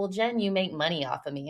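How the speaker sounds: normal talking voice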